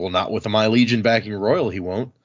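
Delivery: ordinary delivery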